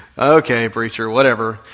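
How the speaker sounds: put-on snarky, flippant tone. Acting out a fisherman's reply to Jesus's request to use his boat: imitating a flippant, snarky reply. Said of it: "flippant and sarcastic and a little bit snarky".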